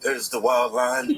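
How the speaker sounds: low, slow nature documentary narrator voice.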